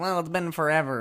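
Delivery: loud whining. Retelling what Connie said at the police station: whiny Connie impression. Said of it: "Connie is so whiny".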